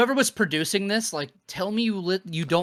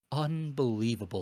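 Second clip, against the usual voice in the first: exclaimed in a big announcer-style voice; 5 semitones lower, 6 dB quieter than usual. Retelling a co-announcer's one-word reaction: imitating Jerry Lawler saying unbelievable. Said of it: "That's the delivery".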